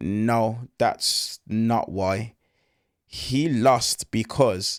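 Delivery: very slow, halting delivery.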